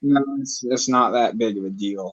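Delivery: glum, sad, downcast, let-down voice. Painting while talking on a call, answering the other person, sounding sad. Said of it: "you sound sad now".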